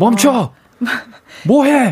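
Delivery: angry voice, pitched way up. Demonstrating how to raise your voice while teaching driving, angry-sounding demo. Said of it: "그게 화예요".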